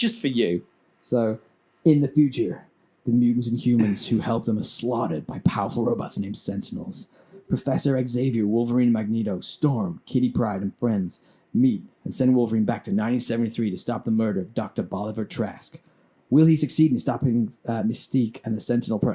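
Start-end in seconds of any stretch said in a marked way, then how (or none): 1.0-19.1 big, epic movie-trailer narrator delivery. Doing a movie plot synopsis to wind up a listener: epic guy voice. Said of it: "in epic guy voice".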